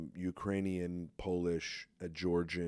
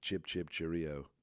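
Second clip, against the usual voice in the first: put-on English accent. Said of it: "she was just like".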